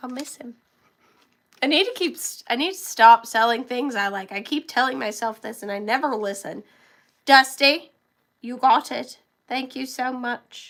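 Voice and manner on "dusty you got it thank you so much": really bad, badly faked British accent. Speaker thanking a buyer for a sold item, in a really bad british accent. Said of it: "talking in a really bad British accent".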